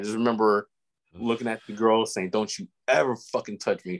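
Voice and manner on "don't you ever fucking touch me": mock-furious, acted-out angry delivery. Recounting being laughed at and confronting a girl, retelling a furious retort. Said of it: "And I was furious".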